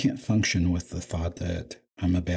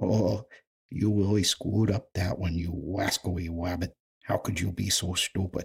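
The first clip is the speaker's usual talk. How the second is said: cartoon voice, r sounds said as w. Trying different voices for the same scolding line: Elmer Fudd voice. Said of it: "Maybe even Elmer Fudd".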